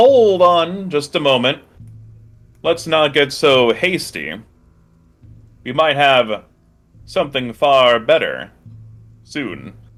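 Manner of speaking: slow, measured cult leader voice. Voicing the cult leader, who stops a cultist: cult leader voice. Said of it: "the cult leader holds his hand up".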